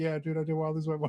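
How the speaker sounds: mock crying man voice. Retelling a clip of a player who lost his money: imitating a crying man. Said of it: "You crying 'cause you lost the money?".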